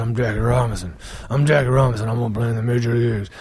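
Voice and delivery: very deep, very low, gravelly superhero movie voice. Mocking a movie where Jackie Robinson speaks like Batman, gravelly low Jackie Robinson voice. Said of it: "speaks like Batman. It's a gravelly low voice".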